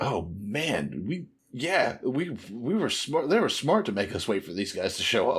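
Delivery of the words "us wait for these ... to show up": ordinary talk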